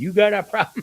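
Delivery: acted-out, loud screaming. Retelling going outside after a neighbor banged on the wall: imitating own scream. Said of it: "I went outside and I screamed".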